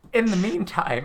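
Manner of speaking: voice cracking mid-phrase, jumping high. Speaker moving on to the next thing, with a horrible voice crack. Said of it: "that was a horrible voice crack".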